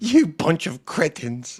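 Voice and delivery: hushed, cross, irritated grandma voice. Quoting another speaker's insult back, in a mock-angry Nan voice. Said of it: "sounds like an angry Nan chasing mice around the house".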